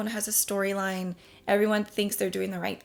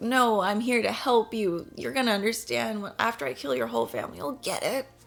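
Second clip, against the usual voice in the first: put-on self-righteous villain voice; 2 semitones higher than usual. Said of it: "Not like this self-righteous".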